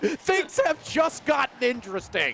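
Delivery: excited, energetic delivery.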